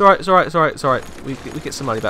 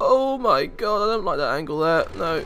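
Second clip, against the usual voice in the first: high, openly disapproving, displeased outburst; 5 semitones higher than usual. Showing viewers a city view, reacting to one angle in a disapproving tone. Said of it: "Sorry about that tone of voice".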